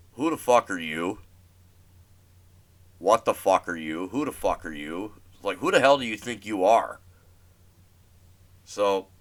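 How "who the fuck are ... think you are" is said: stunned, disbelieving, incredulous outburst. Retelling own reply to a rude customer: retelling own disbelief. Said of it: "I'm like in disbelief".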